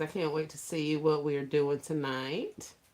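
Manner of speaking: ordinary delivery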